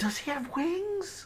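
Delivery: very high, hushed half-whisper. Voicing a girl asking a player about his companion: half-whispering. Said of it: "And she whispers in your ear".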